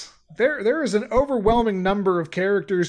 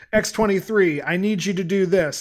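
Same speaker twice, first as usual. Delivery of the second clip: usual speaking voice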